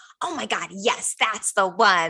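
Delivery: very slow, drawn-out, eager, excited gush. Retelling answering friends about an outfit: imitating own excited yes. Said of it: "they would know on the way I said yes".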